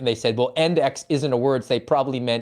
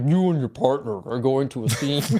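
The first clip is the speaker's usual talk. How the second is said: nice, pleasant instructional narrator voiceover. Recalling a firearms training system's voiceover, FAT system narrator voice. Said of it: "the nice narrator uh, voiceover would be like".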